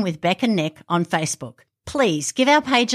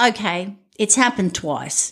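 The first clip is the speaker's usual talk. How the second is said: usual speaking voice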